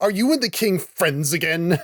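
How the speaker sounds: put-on snotty, high British child voice. Imitating the child actor's last line: a bratty British kid. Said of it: "he sounds like such a little British twerp".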